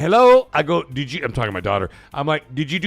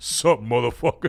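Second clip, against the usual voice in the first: put-on voice dropped a few octaves, quieter; 4 semitones lower, 5 dB quieter than usual. Retelling what someone says to greet people: voice dropped a few octaves. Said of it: "drops voice a few, a few octaves".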